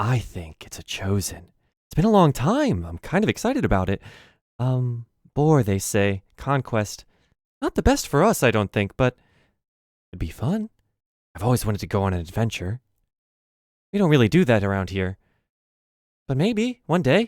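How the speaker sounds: secretive, conspiratorial manner. Voicing a character who leans in to share a rumor: conspiratorial manner. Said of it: "looks at you conspiratorially and then, leans in".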